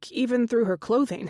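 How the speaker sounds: plain reading voice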